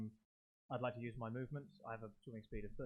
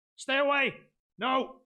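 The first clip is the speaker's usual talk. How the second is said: high, loud yelling. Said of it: "I shout".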